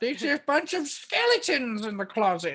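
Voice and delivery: very high, fast, swooping cartoon villain voice. Doing an old woman voice, the speaker drifts at the end: Skeletor voice. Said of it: "Old woman voice".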